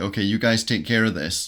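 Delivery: plain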